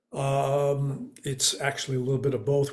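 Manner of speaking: droning, lifeless, flat monotone with filler um. Demonstrating a hard-to-listen-to delivery, flat monotone with fillers. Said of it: "I'm going to do it with lots of defaults. I'm going to do it with some bad gesturing, with monotone".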